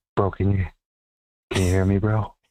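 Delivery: speaking in a whisper. Calling in on the phone line, asking if the host can hear: whispering. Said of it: "You whispering tonight".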